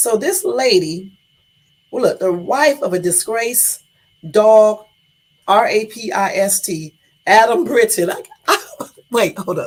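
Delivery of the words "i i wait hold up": talking while laughing and giggling through words. Reading a news headline aloud and breaking up: laughing while talking. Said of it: "this is making me laugh".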